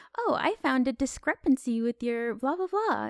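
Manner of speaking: polite, proper-sounding, polished voice.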